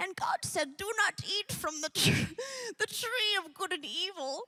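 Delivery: high, snaky put-on snake voice. Retelling a voice from the kitchen reading the bible story, in a snake voice. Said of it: "That's the snake's voice".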